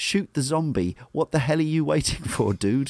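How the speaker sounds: put-on annoyed shouting, pushed up high, fed up. Retelling shouting at a game character during cutscenes: imitating shouting at the screen. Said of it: "I'm shouting at the guy in cutscenes".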